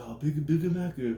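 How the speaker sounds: put-on leaning into a stronger Japanese accent. Retelling how the speaker's brother stepped in to help, a bit more Japanese accent. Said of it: "in a little bit more of a Japanese accent".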